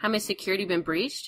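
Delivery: plain reading voice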